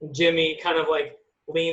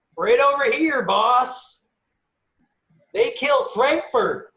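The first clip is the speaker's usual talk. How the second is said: high-pitched, loud hollering yell; 8 semitones higher, 3 dB louder than usual. Voicing a character running back out to the boss, yelling.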